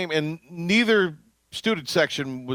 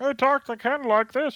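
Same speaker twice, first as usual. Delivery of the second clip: nerdy voice, much higher pitch; 9 semitones higher than usual. Demonstrating how he talked earlier, in a Beaker-like nerdy voice. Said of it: "Sounded a little bit like Beaker".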